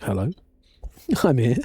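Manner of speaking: questionable, put-on Irish accent. Describing someone who turns up briefly, the speaker does a questionable Irish accent. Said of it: "a very small snippet of a questionable Irish accent".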